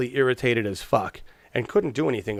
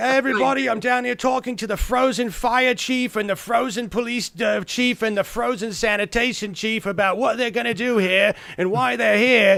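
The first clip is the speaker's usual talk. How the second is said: put-on Australian or British TV reporter accent, high voice; 9 semitones higher, 4 dB louder than usual. Retelling a reporter the broadcast cut to: Australian or British accent. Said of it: "some Australian guy or British guy".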